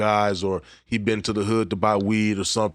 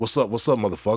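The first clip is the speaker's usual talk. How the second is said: mock tough, confrontational posturing voice. Showing how to pose on someone to test them: mock tough posturing. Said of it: "just pose on 'em".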